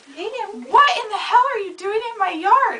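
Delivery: shrill, high, loud screaming outburst. The speaker recounts confronting a naked man in the yard, retelling her screaming. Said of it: "I just started screaming at him".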